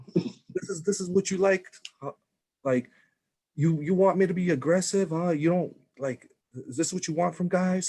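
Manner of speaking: high, aggressive, jeering, taunting scream. Speaker reenacts screaming at his partner after the shower, retelling screaming at someone. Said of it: "like screaming at her".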